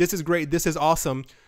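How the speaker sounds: plain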